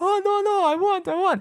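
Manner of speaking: acted, very high, desperate tearful begging. Retelling a man on his knees begging: imitating tearful pleading. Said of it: "fucking tears in his eyes".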